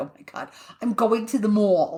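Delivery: put-on New York accent. Speaker retells being asked to say a phrase in new york style; put-on new york accent. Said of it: "say it in New York".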